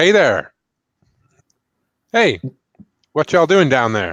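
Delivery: brash, plucky, very loud call-out. Retelling how trainee Kel calls out to the guys below while unloading, brash and plucky. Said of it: "brash, plucky, naive trainee that he is. He just calls out".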